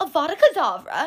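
plain, straight delivery without any gasping. Showing how one character casts a spell: Hermione voice. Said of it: "Hermione would say it".

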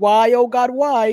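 angry shout, loud and drawn out. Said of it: "terminé gritando más todavía a mi televisor".

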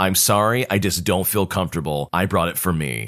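ordinary delivery, nothing marked

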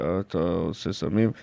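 very low voice, murmured inward. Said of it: "אומר בקול שלו, יש לו קול נמוך מדי, כאילו הוא מדבר הפוך, הוא מדבר פנימה".

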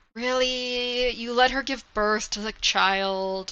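very slow, mock-disappointed dad voice. Speaker recaps the Lord Ruler learning she gave birth; Lord Ruler as mock-disappointed dad. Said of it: "He's like a disappointed dad".

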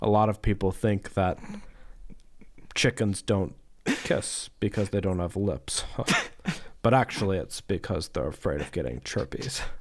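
dry delivery, voice dropped low. Retelling a biology professor's joke in class: imitating Doctor Davis deadpan. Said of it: "delivered that deadpan".

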